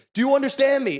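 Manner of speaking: high, barking cop voice, yelling in your face. Retelling a cop ordering a driver to back up: imitating a cop yelling. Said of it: "he's just yelling in this guy's face".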